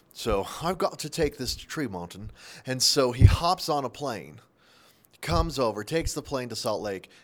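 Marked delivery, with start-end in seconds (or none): 0.1-2.1 put-on British-sounding accent. Voicing the chinese factory worker who boxes the ipad order: british accent. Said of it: "the Chinese guy has a British accent".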